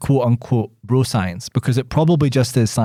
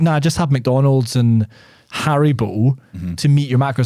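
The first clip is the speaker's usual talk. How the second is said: plain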